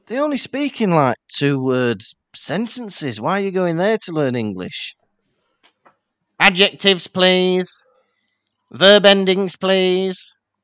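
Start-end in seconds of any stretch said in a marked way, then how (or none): 6.4-10.3 slow, halting, creature-like goblin voice. Back from work experience at Gringotts, she answers another character: talking like a goblin. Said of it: "Why are you talking like a goblin?".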